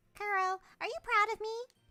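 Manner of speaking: squeaky voice, very high and loud. Reading dialogue aloud, voicing the neighbor girl, squeaky Sayori voice. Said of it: "I gave her the squeaky voice too".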